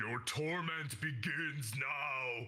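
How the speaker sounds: echoing, reverberating, very echoey voice. Narrating a game scene, voicing the rider on top of the nightmare, very echoey voice. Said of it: "you hear like a very like echoey voice".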